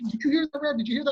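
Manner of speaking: play-acted, worked-up, high, rushed, words tumbling out. Retelling what the excited defender said to the referee: imitating an excited player. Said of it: "he's real excited".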